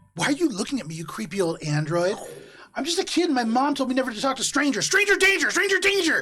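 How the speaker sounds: put-on high, rising shout in a child's voice. Voicing a child who accuses an android stranger: child shouting accusingly. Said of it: "And they just start shouting".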